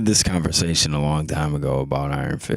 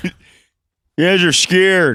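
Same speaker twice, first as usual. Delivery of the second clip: put-on Michigan twang, very high, very slow, drawn-out; 7 dB louder than usual.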